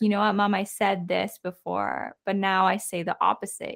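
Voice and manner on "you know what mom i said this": usual speaking voice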